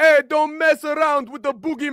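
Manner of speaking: put-on Jamaican accent. Friends discussing a cartoon; one quotes Grim in his Jamaican accent. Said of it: "I love that Grim was Jamaican".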